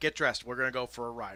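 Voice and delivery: ordinary talk, nothing marked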